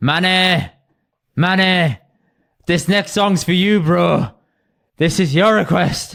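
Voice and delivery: slow, put-on northern English DJ accent. Retelling what a dj said between songs; put-on northern english accent. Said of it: "Did he have the accent?".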